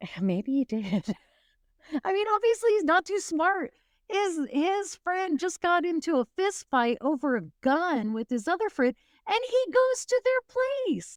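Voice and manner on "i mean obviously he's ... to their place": high, laughing, disbelieving tone through the words. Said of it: "forgive me for laughing".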